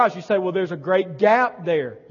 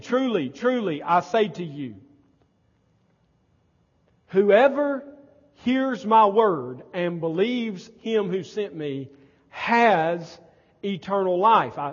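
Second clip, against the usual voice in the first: slow, deliberate, careful reading, drawn-out "has". Reading a scripture passage aloud because it is important, reading slowly. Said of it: "I read that slowly because it's important".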